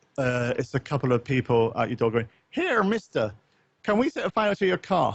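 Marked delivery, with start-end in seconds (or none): 2.5-5.2 put-on homemade Irish accent, high and swooping. Telling a story about people at your door, in an Irish accent. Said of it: "That was my Irish accent".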